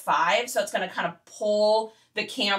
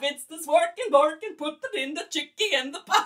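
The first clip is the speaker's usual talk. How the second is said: really bad fake Swedish accent; 7 semitones higher than usual. Chatting with Vicky and Nick, doing a bad Swedish Chef impression. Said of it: "The Swedish Chef".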